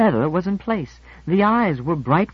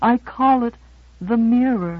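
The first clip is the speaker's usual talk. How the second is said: shy, bashful, slow and pitched up; 5 semitones higher than usual. A woman names her sculpted head for the admiring narrator, said shyly. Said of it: "dimpling shyly".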